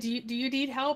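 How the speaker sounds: plain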